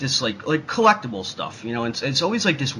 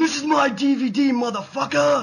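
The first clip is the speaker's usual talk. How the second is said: very high-pitched, drawn-out hyped-up delivery; 13 semitones higher than usual. Showing how a collector video should sound: Samuel L. Jackson voice. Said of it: "make it sound like fucking Samuel L. Jackson".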